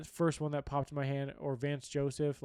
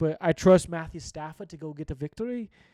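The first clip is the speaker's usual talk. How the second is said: bad fake Scottish accent; 10 dB louder than usual. Trying out accents that keep slipping; bad put-on Scottish-sounding accent. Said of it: "That's still a wee bit Scottish".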